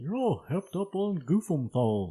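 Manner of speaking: poor Texan drawl. Quoting a line from King of the Hill, horrible Hank Hill impression. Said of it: "that was a horrible Hank Hill".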